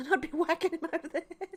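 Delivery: fast, high talk bubbling out through giggles. Speaker pictures herself as a little old lady with her handbag: giggling while talking. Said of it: "I got a case of the giggles right now".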